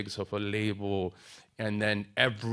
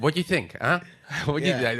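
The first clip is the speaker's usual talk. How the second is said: different voice, high, loud, pressing and coaxing; 5 semitones higher, 5 dB louder than usual. Recalling the meetings they used to go to, the speaker does the Jimmy voice. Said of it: "I'm doing the Jimmy voice".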